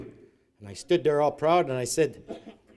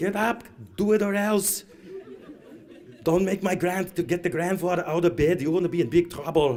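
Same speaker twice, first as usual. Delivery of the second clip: put-on old woman's Austrian accent, higher; 3 semitones higher than usual. Imitating a grandmother waking a child for school, austrian accent. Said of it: "that's how my grandmother used to talk".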